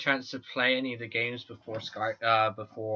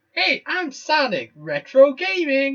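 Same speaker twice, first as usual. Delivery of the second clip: shrill, loud, high cartoon hero voice with big swoops; 10 dB louder than usual. Suggesting retro gaming as a name while doing a Sonic voice. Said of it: "I'm Sonic. ... I can't do a Sonic voice".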